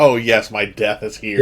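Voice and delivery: plain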